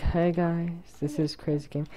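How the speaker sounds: very quiet, hushed, barely-there voice. Speaker recalls how they talked in their first video, imitating own quiet voice. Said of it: "I was, like, so quiet".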